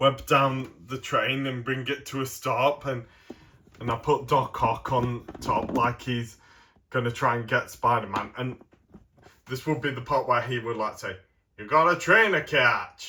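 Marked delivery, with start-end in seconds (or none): 11.6-13.1 delivered in an American accent. Describing a game scene, voicing a villain's line to Spider-Man; Doc Ock line, too American. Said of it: "that was too American".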